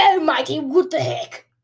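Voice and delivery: clumsy, bad, put-on Australian accent, very loud, high. Repeating own exclamation from a moment ago: bad Australian accent. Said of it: "Did I sound like an Australian".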